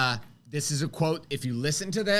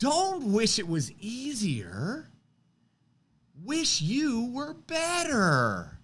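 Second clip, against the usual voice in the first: very slow, swooping delivery with the end stretched; 7 semitones higher than usual. Quoting what Jim Rome says, in a Jim Rome voice. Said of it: "I'm going to try to do it in his voice".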